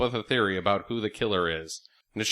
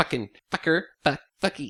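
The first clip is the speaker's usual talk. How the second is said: mock stiff, try-hard, forced, pitched-up voice; 5 semitones higher than usual. Mocking an actress's cursing in a film: imitating forced swearing. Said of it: "just so forced".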